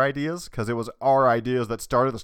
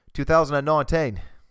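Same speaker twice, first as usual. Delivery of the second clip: fake put-on Australian accent; 2 semitones higher than usual. Repeating the date just read out, in a put-on Australian accent. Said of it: "That's my Australian accent".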